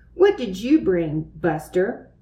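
ordinary delivery

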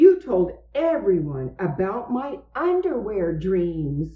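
usual speaking voice

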